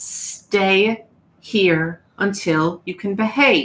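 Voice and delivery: very stern, strict, commanding voice, spoken very slowly. Voicing a housekeeper who scolds a player character: very stern and commanding. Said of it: "says very sternly and very commandingly".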